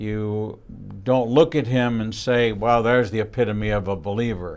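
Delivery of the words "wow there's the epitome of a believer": normal talking voice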